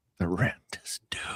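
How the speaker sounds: whispered, breathy, hushed ghostly voice. Retelling how a ghost spoke from the closet: ghostly whisper from the closet. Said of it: "the whisper would come out of the closet".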